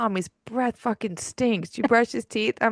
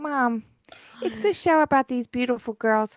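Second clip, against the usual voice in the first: sugary, sweet, put-on little-boy voice. A mother retells what her four-year-old son told her, imitating a child's sweetest little voice. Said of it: "his sweetest little voice".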